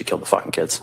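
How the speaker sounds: normal talking voice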